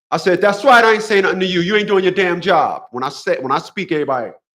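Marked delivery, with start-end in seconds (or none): 0.4-2.8 mock very vocal, loud, projected, carrying voice. Retelling a retort to a clerk at the store: retelling own loud vocal retort. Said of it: "in a very vocal tone".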